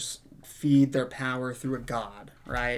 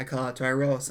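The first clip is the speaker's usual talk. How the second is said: plain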